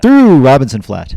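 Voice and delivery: very loud, high auctioneer-style holler. Joking about calling race updates on the live stream: imitating an auctioneer's rapid patter. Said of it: "I'm gonna sound like a damn auctioneer".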